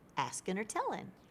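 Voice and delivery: light, warm, playful tone, slightly high. Showing how to talk to a child at level one, playful, warm tone. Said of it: "my tone is still playful and warm".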